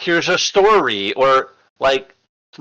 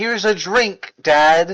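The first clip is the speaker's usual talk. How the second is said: mock cheerful, happy tone, higher pitched; 5 semitones higher than usual. Retelling how a character offered her father a poisoned drink: imitating a happy offer. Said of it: "walked over to him happily saying".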